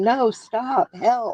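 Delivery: high-pitched parrot voice, crying out. Telling what the two parrots say when he shoots: imitating the parrots. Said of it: "they'll say".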